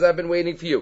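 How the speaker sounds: plain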